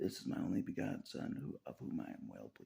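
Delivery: ordinary talk, nothing marked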